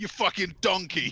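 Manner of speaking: high-pitched yelling. Quoting Gordon Ramsay for a joke, imitating Gordon Ramsay yelling. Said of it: "to also quote Gordon Ramsay".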